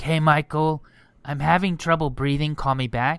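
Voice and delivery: put-on raspy voice. Retelling a voicemail she left him, imitating a raspy voice. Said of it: "she had like a raspy voice".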